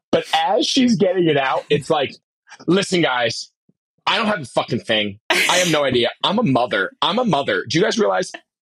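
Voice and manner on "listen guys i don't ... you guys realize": falsely modest, self-deprecating, rambling. Imitating E A opening an interview question: imitating E A, self-deprecating. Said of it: "like, an impression".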